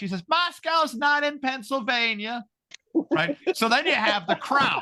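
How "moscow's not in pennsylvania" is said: very high, drawn-out screaming. Retell her answer after you screamed a question at her, retelling her screaming back. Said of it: "So she screams back".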